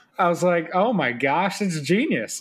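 ordinary delivery

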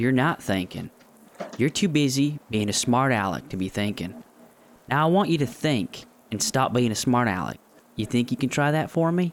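put-on sudden rural American country twang accent. Character addressing another character in a scene, sudden country twang. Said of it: "why do you all of a sudden have a country twang".

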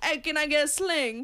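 attempted 1920s Chicago accent. Acting out a customer ordering a sling, attempted 1920s Chicago accent. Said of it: "I was trying to do like 1920 Chicago".

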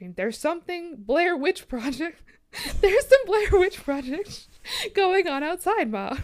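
shrill, very high, very loud frantic screaming. Retelling screaming to ma about something outside at night, retelling a panicked scream. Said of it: "so I started screaming".

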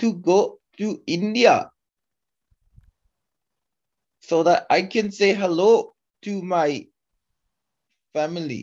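high-pitched put-on Indian English accent. Speaker tries out an accent during a conversation, in an Indian accent. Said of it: "How do I do an Indian accent?".

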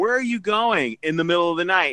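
plain

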